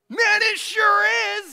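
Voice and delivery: high, loud, slow yell. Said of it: "he just yelled it right back at him".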